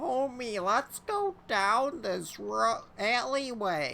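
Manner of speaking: reaches high pitch, drawn out, missing the note. Trying a Marge Simpson voice while heading to a shop: bad Marge Simpson impression. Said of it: "I can't do a Marge".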